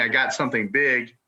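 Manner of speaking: mild, held-back, small holler. While spearfishing, the speaker repeats what he heard hollered from twenty feet away: retelling a yell. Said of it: "he yells at me".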